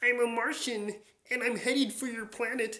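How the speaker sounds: very high, loud, belted cartoon Martian voice. Showing one of your voices from Looney Tunes, do a Marvin the Martian voice. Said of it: "I'll do Marvin Martian from Looney Tunes".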